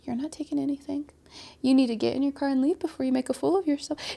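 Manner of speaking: calm, soft, composed, unruffled put-down. Retelling how a woman answered a man yelling at her, imitating her calm reply. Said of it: "She was so calm".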